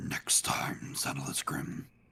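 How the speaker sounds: very slow, breathy villain whisper, every word dragged. Saying a line the way Doctor Claw would: Doctor Claw voice. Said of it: "gotta say it like Doctor Claw from Inspector Gadget".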